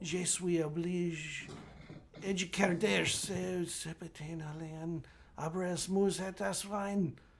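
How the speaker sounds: high-pitched, mumbled gibberish. A game master voicing a man whose words trail off, mumbling. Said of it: "maybe not whispering so much as mumbling".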